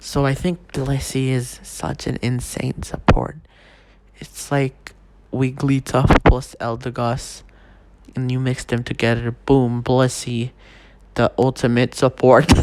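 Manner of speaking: speaking in a whisper. Ranking Pokémon in a tier list with people around, whispering. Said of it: "I need to whisper because everyone is around me".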